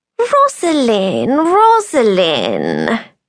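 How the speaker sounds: affable, genial, friendly sing-song tone. A man greets rosalind in a friendly tone. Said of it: "he said, in what sounded for all the world like a friendly tone of voice".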